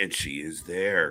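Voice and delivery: sly, low, slow, knowing stress on "she is there".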